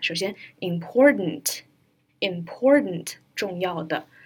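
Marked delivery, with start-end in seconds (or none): 0.6-3.2 important spoken slowly and drawn out. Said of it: "我们一个一个来看".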